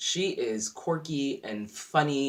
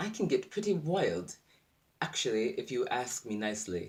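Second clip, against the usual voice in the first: clumsy, bad put-on English accent; 4 dB quieter than usual. Quote what Lisa says, trying to do the accent better, in a bad put-on English accent. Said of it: "let me see if I can do my English accent better".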